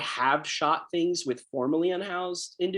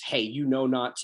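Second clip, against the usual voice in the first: usual speaking voice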